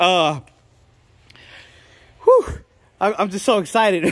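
winded, out of breath. Showing viewers a finished paint color mix, out of breath. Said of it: "I'm out of breath here".

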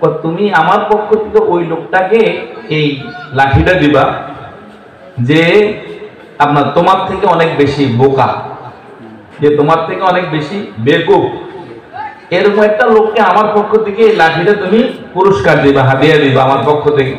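normal talking voice

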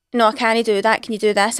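plain

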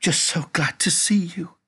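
soft whisper, very high pitched. Reading a first-person narrator's reply to Suki, whispered. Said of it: "I whispered".

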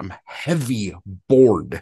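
furious, loud, emphatic, angry delivery. Retelling how the poet read his poem aloud: imitating John Berryman reading angrily. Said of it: "he's so angry".

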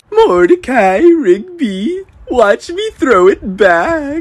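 shrill, very high, loud cartoon character voice. Speaker announces impressions of cartoon characters, then begins: Regular Show character impression. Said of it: "This is my impression of regular show characters".

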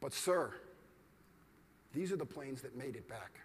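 said very quietly and softly, understated. Retelling a mathematician's calm answer to a yelling air marshal: imitating von Neumann speaking quietly. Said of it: "von Neumann says very quietly".

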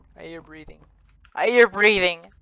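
genuinely frightened, alarmed, high voice. Streamer exploring a creepy long hallway, hearing breathing, scared. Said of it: "I actually am scared".

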